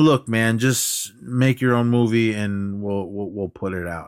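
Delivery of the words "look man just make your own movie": ordinary delivery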